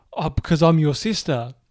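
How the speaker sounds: blubbering, tearful crying voice. Retelling a movie's ending, acting out a character's tearful line, imitating someone crying. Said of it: "crying like".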